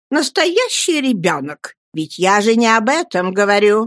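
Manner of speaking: sharp, impatient tone. Narrating a woman correcting the mother, impatient exclamation. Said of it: "нетерпеливо воскликнула мисс Бетси".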